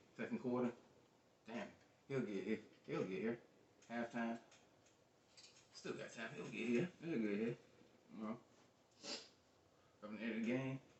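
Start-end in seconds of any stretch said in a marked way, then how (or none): none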